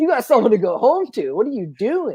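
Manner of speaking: high, laughing mock pleading yell.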